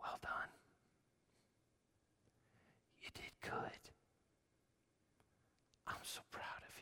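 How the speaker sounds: hushed, very quiet whisper, close to the ear. Imagining being embraced in heaven and told well done: imitating a whisper. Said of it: "he whispers in my ear".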